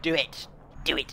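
villainous, goading evil emperor voice. Quoting a line, the speaker does a Palpatine impression. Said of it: "that was my Palpatine impression".

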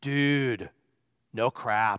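low, laid-back surfer dude voice. Recalling his reply to a student, the speaker answers in a Keanu Reeves voice. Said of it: "in my best Keanu Reeves voice".

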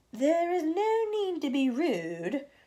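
icy, very drawn-out voice. The glowworm answers the centipede who shouted at her to put out the light, coldly. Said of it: "she said coldly".

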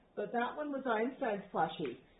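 ordinary delivery

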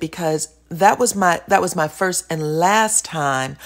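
plain

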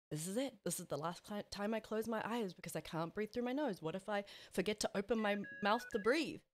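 plain

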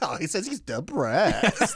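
laughing through words. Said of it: "she starts busting up laughing".

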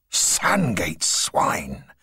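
hissing with swooping pitch. A man hisses as three horsemen head toward them. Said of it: "hissed Mipps".

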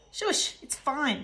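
words snapped out sharply. A father at the wheel answers Kate, who has just screeched at him, snapping. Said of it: "snapped Dad".

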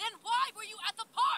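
angry shouting. In a drama, a parent argues with their child in a raised angry voice. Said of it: "I'm sorry about raising my voice".

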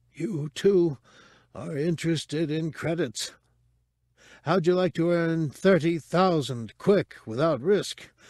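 husky pleading. A human courier offers strangers credits, pleading in a ghastly husky voice. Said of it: "A human courier. ... the man pleaded in a ghastly husk of a voice".

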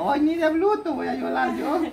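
put-on high, sweet, giggly baby voice.

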